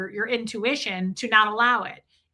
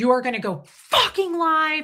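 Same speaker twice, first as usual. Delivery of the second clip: play-acted high screaming, climbing higher as it goes; 6 semitones higher, 3 dB louder than usual. Retelling a phone call in which the caller made demands: imitating someone screaming. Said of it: "And he starts screaming".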